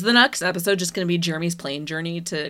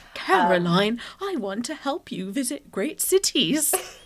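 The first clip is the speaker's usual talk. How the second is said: gentle, sing-song British dad voice; 6 semitones higher than usual. Discussing a show scene, the speaker imitates Klaus talking to Caroline: Klaus's gentle British dad voice. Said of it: "using his, like, gentle British dad voice".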